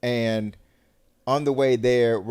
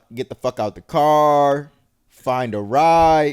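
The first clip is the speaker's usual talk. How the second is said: louder, slow, angry, words spat out. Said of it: "You popping off on dog?".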